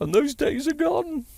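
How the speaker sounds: very high, mocking, taunting tone.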